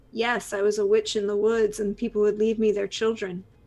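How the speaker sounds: dry deadpan, flat, level and expressionless. Voicing a character answering a player's question: deadpan. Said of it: "She turns and looks at you deadpan and goes".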